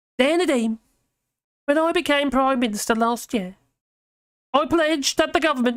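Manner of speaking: tiny, squeaky little voice. Reading aloud Rishi Sunak's letter sacking a minister, in a squeaky little voice. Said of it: "She's like a really squeaky little voice".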